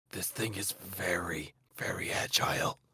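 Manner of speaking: slow whisper, stretched-out word "very". Warning a companion quietly about a creature: whispering. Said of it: "I whisper to Felix".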